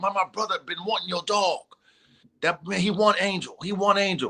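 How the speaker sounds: eager, worked-up voice. Retelling his partner's reaction about the dog, imitating the excitement in his voice. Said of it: "He he had that excitement in his voice".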